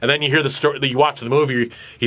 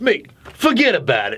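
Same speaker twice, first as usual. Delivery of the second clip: clumsy, badly done wise-guy Italian mobster accent; 4 semitones higher than usual. Mocking how everyone thought they were a mobster when the Sopranos aired: mobster accent impression. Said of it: "I could never do an Italian accent".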